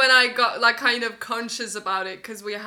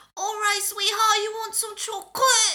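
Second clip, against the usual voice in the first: put-on very high, nasal old-lady grandma voice; 12 semitones higher than usual. Speaker shows the voice they put on, in a nasal old grandma voice. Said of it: "like an old grandma".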